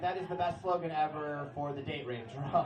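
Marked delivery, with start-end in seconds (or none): none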